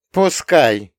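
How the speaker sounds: cold, icy, smirking tone. A woman answers a complaint about too few fighters, coldly smirking. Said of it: "холодно усмехнулась Синти".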